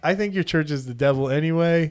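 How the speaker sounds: usual speaking voice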